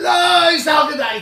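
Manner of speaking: acted, piercing, very high, loud shriek. Retelling screaming the next Gemara words at a class: retelling a scream. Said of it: "So I screamed".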